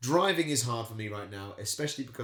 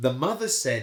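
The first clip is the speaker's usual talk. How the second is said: plain reading voice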